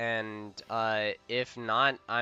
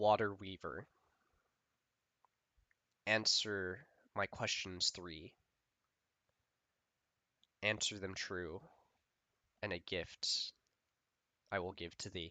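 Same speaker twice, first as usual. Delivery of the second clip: soft-spoken water dragon voice; 3 semitones lower, 9 dB quieter than usual. A game narrator voices a dragon questioning a player, in a water dragon voice. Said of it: "The dragon now speaks".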